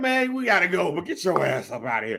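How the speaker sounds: annoyed, irritated wrestling-announcer tone. Coaching how a Monday Night Raw announcer should go to break, sounding irritated. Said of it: "Sound irritated".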